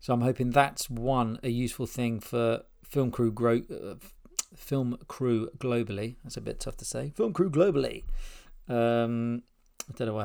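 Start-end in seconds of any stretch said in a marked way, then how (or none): 7.1-8.0 higher-pitched MC announcer voice. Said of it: "I had to say it in an M C voice".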